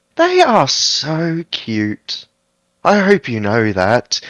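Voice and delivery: tiny little voice, high, sing-song and swooping. Voicing an unseen creature near the sled dogs: small voice. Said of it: "a small voice saying".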